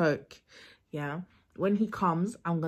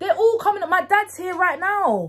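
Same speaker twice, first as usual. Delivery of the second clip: high, loud, shouted fake arguing tone. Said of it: "act like I'm having an argument".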